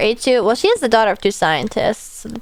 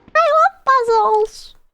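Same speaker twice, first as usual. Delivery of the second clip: put-on very high, childlike little-child voice. Playing a puzzle with a young character, doing a child impression. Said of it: "That's my child impression".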